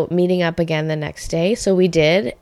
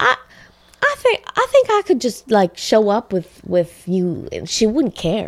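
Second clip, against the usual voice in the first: put-on southern drawl, much higher pitch; 4 semitones higher than usual. Quoting a man who offered to take the speaker to a songwriter's house, put-on southern drawl. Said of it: "nice accent, by the way".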